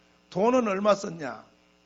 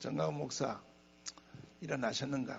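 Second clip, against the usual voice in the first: soft, low, quiet voice. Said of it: "나적한 목소리로".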